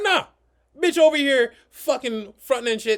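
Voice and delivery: furious rant, very high and very loud. Retelling ordering a girl out of the car: imitating own angry words. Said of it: "Just calm down".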